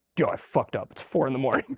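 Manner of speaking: mock, half-hearted, sort of cross angry voice. Retelling what a man said on walking in during the shower, mock-angry voice. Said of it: "kind of says, angry voice, goes".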